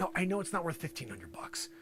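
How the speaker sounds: soft, unvoiced whisper.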